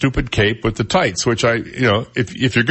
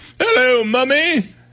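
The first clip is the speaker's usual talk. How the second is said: put-on British accent, pitched high; 12 semitones higher than usual. Joking about how Doctor Who talks: mock British accent. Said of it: "He talks in British".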